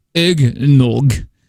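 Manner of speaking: put-on drunk-sounding Russian accent. Mimicking how the other speaker says eggnog, mock drunk Russian accent. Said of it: "Drunk Russian".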